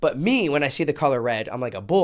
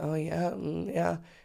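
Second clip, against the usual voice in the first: mock, very slow, seductive sexy drawl; 4 semitones higher, 10 dB quieter than usual. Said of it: "talking to him in a sexy voice".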